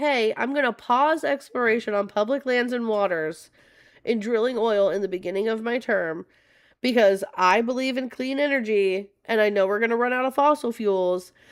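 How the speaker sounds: ordinary delivery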